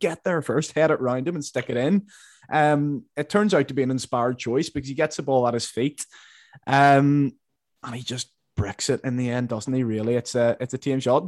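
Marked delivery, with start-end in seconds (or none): 0.0-2.1 urgent screaming like a fan at the TV. Retelling what was yelled at the TV during a chance: imitating own screaming. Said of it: "I was screaming at the T V".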